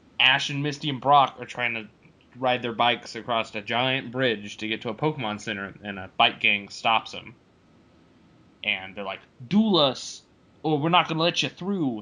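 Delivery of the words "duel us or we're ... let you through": put-on tough-guy Jersey accent. Recounting an episode where a bike gang blocks the heroes, jersey action accent. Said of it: "they had Jersey action accents".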